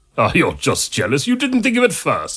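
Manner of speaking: scornful, dismissive, derisive scoff. A monk answers the doctor who called his songs ridiculous: scoffing. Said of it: "scoffed the monk".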